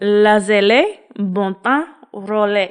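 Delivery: attempted French phrase, put-on French pronunciation. Attempting a French phrase after admitting not speaking French: attempted French phrase. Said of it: "that sounded a little less like horn dog creeper".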